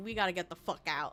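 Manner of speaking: hammy, intense, rushed, all-out urgent blurt. Retelling a movie mother's line urging everyone to flee, imitating someone going all out. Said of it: "she went ham with".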